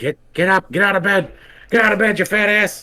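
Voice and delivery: very high, shrill, berating yell. Retelling an alarm recording of Dana Snyder: imitating Dana Snyder yelling. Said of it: "yelling, like".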